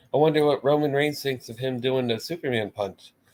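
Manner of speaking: ordinary talk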